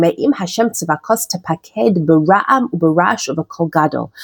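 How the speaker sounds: usual speaking voice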